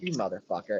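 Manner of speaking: put-on casual, offhand, tossed-off everyday tone. Imitating how someone else casually said the curse: imitating a casual curse. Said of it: "And then just so casual".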